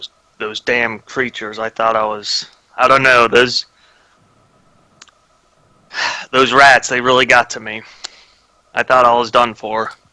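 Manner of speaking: hushed, confiding voice, kept close. Talking to a companion while waiting, about the creatures: hushed voice. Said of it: "kind of in a hushed voice".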